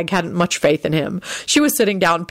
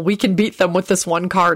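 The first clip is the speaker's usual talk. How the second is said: plain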